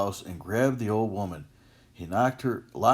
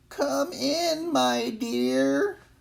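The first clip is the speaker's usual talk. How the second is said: put-on very high, creaky old-woman crone voice. Reading a fairy tale, the wolf calls the girl in: wolf faking an old woman's voice. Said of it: "The wolf called out in an old woman's voice".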